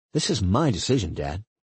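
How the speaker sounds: usual speaking voice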